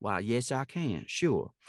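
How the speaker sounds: slow, drawling Southern accent. Acting out an audition reply after being asked: Southern drawl. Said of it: "in a Southern drawl".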